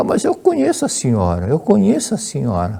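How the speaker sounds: put-on Portuguese with a swooping Spanish accent. Retelling a Venezuelan delivery man's words to a woman, Spanish accent. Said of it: "falando no sotaque espanhol".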